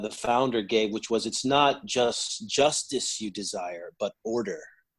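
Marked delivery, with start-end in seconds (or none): none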